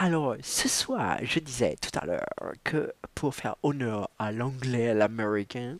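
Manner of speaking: strange, odd put-on English accent. Speaking French before reading The Great Gatsby aloud, in an odd English accent. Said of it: "je prends un accent anglais un peu bizarre là".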